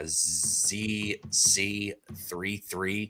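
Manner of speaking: very slow, soft, careful reading. Streamer greeting a chat member by reading out their username, reading very slowly. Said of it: "I had to read that so slow".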